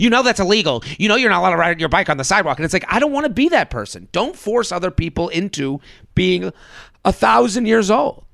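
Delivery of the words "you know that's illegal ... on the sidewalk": nagging, entitled busybody voice. Calling out a bike on the sidewalk, speaker slips into a Karen impression. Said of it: "it's like I'm doing a Karen impression".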